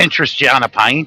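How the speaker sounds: put-on Scottish accent. Reacting to hearing a scottish accent: put-on scottish accent. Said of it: "Every time I hear the Scottish accent".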